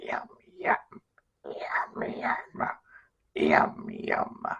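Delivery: very slow, deep, gravelly growl, drawn out. Explaining how to voice the gremlins with teeth and tongue: gravelly deep gremlin voice. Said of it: "You have to do like a gravelly, deep voice".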